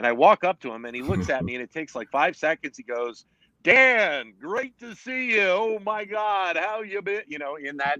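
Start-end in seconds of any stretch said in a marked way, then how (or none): 3.6-7.2 very high pitched, slow, unhurried delivery. Retelling a colleague's greeting at an autograph signing: Harry voice. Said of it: "that unmistakable Harry voice".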